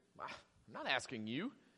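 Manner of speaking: very quiet, slow, mocking, with attitude. Reading a passage aloud in one interpretation: slightly mocking, with attitude. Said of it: "I read it with a little bit mockery tone, a little bit of an attitude".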